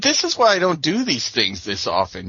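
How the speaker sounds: usual speaking voice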